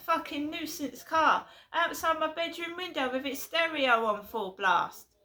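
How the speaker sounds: speaking up over noise. Complaining about a noisy car outside their bedroom window, shouting over the noise. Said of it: "Sorry, I'm shouting".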